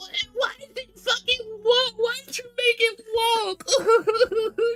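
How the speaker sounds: put-on very high, babyish, drawn-out whining. Mocking online complainers about a game's main character: imitating whiny complainers. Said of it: "whiny little babies who are just like".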